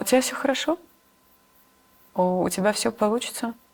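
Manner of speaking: teary voice, holding back tears. Answering what to tell her younger self, tearing up. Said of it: "Даже сейчас у меня наворачиваются слёзы".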